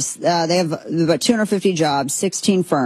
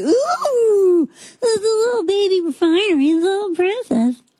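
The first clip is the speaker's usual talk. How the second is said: put-on cutesy baby-talk voice, higher. Mocking a small new refinery, cooing over it: Daisy voice. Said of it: "It's my Daisy voice".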